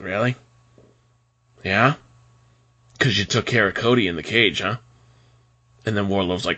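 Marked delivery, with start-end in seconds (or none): 0.0-4.8 put-on wrestler voice with taunting delivery. Retelling a wrestling promo scene: imitating MJF. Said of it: "MJF's entire face changes and he's like".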